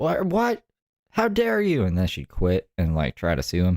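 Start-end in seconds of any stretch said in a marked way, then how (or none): 0.0-1.8 very high, shrill, screeching yell. Picturing the other speaker yelling at a manager: imitating Brooke yelling. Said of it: "You see Brooke yell at her manager".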